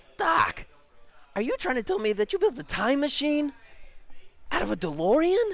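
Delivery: very high, swooping, animated movie-hero voice. Doing the promised obligatory McFly line for viewers: Marty McFly voice. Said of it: "I gotta do the McFly".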